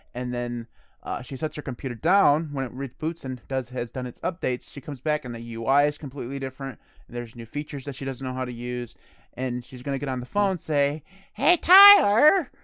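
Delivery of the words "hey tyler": shrill, very high-pitched, very loud call-out. Acting out a woman phoning after her computer updates, imitating a high-pitched voice. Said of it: "I can't get my voice to go up that high".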